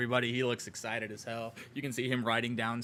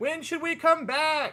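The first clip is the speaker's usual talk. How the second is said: very loud, shrill, high-pitched yell; 8 dB louder than usual. A narrator voices one person in a crowd calling out a question, yelling from the back. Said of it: "one person from the back just yell out".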